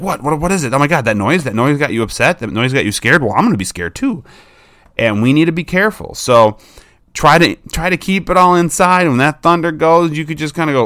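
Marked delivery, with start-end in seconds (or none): 0.0-4.2 fast, anxious, frightened dog voice babble. Acting out a dog reacting to its owner rushing to the window: voicing a dog getting scared. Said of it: "your dog's coming with you like".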